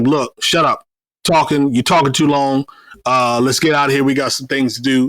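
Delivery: ordinary delivery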